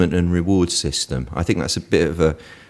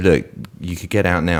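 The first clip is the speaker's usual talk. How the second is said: normal talking voice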